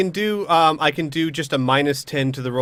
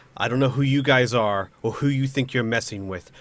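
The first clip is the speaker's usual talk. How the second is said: chilling, icy, menacing, intimidating delivery. Declaring a line for an intimidation check: coldest voice possible. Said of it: "in my coldest voice possible".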